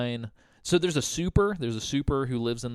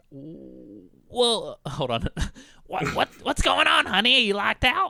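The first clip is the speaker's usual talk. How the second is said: pitched-up woman's phone voice; 8 semitones higher than usual. Retelling a call to the emergency line: imitating Joan's voice. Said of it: "this woman sounded like this".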